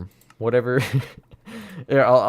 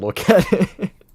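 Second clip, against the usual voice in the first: usual speaking voice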